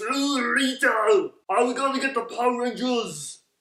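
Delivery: very high-pitched, growled monster voice. Showing how the character talks in the original series: growled Goldar voice. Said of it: "Goldar in the original series kinda talks like this".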